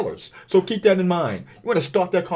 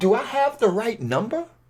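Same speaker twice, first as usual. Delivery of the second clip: slightly confused, puzzled, uncertain tone with lifted pitch; 7 semitones higher than usual. Returning a call about a property that might be for sale, slightly confused tone. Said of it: "Notice the tone in my voice. Notice the little bit of confusion".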